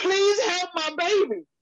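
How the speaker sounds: very high, desperate put-on scream. A parent retelling what they screamed to the paramedic, retelling a scream for help. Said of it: "I screamed to him".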